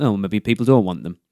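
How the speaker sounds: normal talking voice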